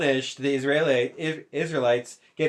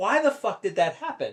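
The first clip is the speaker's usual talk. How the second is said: mock furious angry outburst with swooping pitch; 4 semitones higher than usual. Explaining how anger comes from surprise: imitating own angry outburst. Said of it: "most of the times in my life when I'm angry".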